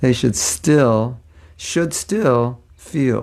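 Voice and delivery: careful, very slow, deliberate delivery, each word drawn out. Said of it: "That's a tongue twister".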